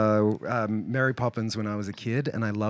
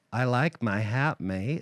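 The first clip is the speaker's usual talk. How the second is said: attempted American accent. Trying an American accent as a joke: attempted American accent. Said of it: "I'll do it as an American".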